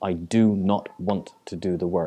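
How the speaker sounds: do not stressed hard and firmly. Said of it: "the expression of".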